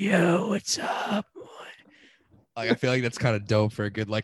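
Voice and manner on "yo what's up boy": very high, rasping, drawn-out croak. Describing being hungover, the speaker is imitating own croaky voice. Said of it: "I also had having a croaky voice".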